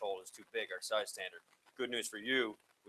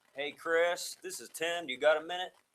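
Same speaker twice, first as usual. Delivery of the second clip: put-on Kentucky-Texas accent, raised in pitch; 7 semitones higher than usual. Retelling a phone call from a caller named Tim, in Tim's Kentucky-Texas accent. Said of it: "This is Kentucky, Texas accent".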